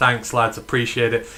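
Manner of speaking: ordinary talk, nothing marked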